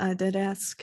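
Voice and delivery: put-on gentle Russian accent. Playing a character in a roleplay scene, answering, in a Russian accent. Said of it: "why did I slip into my Russian accent?".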